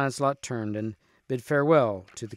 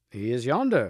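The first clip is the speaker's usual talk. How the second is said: plain reading voice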